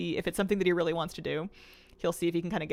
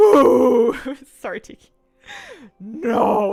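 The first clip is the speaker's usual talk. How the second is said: scariest possible voice, very loud and high; 6 semitones higher, 13 dB louder than usual. Retelling sneaking up on the cat in the dark: retold scariest voice. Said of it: "in like my scariest voice".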